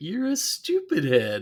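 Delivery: high cartoon voice with widely swooping pitch. Imitating a cartoon character trying to insult someone: Homer Simpson voice. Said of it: "Homer when he's trying to, you know, be it, he's like".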